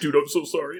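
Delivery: fake, chuckling delivery, laughed through. Speaker retells an opponent's fake apology after an easy win: imitating Parker's chuckling apology. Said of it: "he's chuckling while he says".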